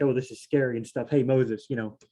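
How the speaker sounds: ordinary talk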